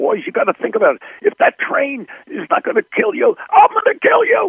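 put-on very high scolding tone. Recalling a train shot, he re-enacts screaming at the boys: retelling his screaming. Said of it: "I started screaming at them like this".

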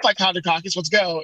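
ordinary talk, nothing marked

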